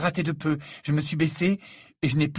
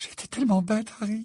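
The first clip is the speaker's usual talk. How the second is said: thin, small, high-pitched murmured voice; 6 semitones higher than usual. A narrator reads a character's reply, small high-pitched murmur. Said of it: "murmura Hermione d'une petite voix aiguë".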